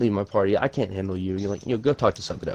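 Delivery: ordinary delivery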